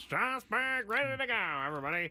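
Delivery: high, teasing, mocking put-on voice. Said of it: "The way you make fun of my voice".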